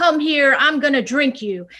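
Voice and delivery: threatening shout. Describing a picture of the Austin Powers villain looking menacing: Fat Bastard shouting. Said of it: "And he's shouting".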